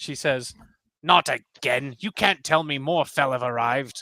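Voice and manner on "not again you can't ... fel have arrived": put-on grumpy, grouchy old woman voice. Voicing a village elder who greets the arrivals: grouchy old woman voice. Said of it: "she looks very grouchy".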